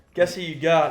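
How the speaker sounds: ordinary delivery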